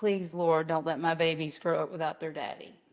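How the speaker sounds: pleading, begging tone. Retelling prayers said for weeks: retelling own pleading prayer. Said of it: "just pleading and begging".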